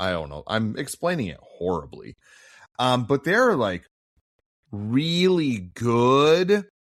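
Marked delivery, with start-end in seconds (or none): 3.0-6.6 slow, heavy dripping sarcasm, "good" drawn out. Calling some films good while meaning the opposite: dripping sarcasm. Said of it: "I hope you can just hear the sarcasm drip".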